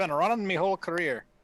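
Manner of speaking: pirate-like voice. Repeating the clip's line, saying it sounds like a pirate: Conor McGregor pirate-like voice. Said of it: "he sounds so much like a pirate".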